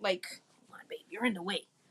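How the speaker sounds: soft, unvoiced, whispered aside.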